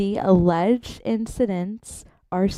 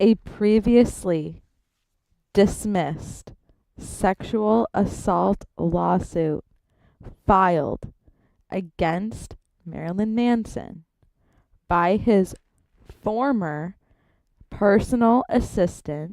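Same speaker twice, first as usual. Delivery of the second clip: reading at a slow pace. Starting to read a text aloud for chat, reading really slowly. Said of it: "This is going to be really slow".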